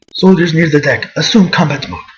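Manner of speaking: put-on spoken with a Spanish accent. Reading game dialogue aloud, copying Meta Knight voice with Spanish accent. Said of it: "I try to mimic the voice that they gave him".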